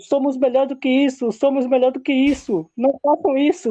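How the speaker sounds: high-pitched, loud shouting. Retelling a series scene where the doctor shouts at fighters: imitating a doctor shouting. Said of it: "e o médico gritando".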